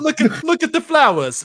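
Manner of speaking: Italian-sounding voice. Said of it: "You sounded Italian".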